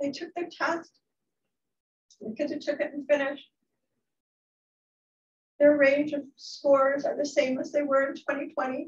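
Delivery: tearful, high crying voice, near tears. A teacher speaking about her students' test scores, crying. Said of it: "I'm going to start to cry".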